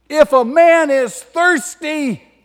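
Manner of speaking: very high, very loud cry. Retelling a teacher's words spoken after standing up, in a loud voice. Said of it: "He says in a loud voice".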